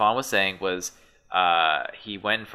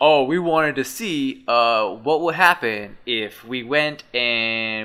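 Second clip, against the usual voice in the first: bad, put-on New Jersey accent; 3 semitones higher, 4 dB louder than usual. Imitating a video maker setting up his videos: bad new jersey accent.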